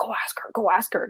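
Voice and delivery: put-on whispered, hushed voice of an older British man. Retelling a London tech event, the speaker quotes men in an older British man voice. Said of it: "in that very older British man way".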